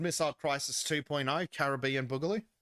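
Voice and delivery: ordinary delivery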